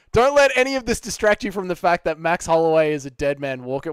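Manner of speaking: ordinary talk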